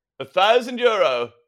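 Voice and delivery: put-on strange, slightly British weird accent. Retelling a rival bidder's call at an auction, in a strange slightly British accent. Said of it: "Slightly British, slightly weird accent".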